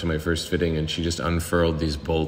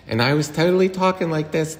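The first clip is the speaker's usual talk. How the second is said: put-on young-sounding, high-pitched Pittsburgh accent. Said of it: "giving you Pittsburgh accent, but, like, with the high voice".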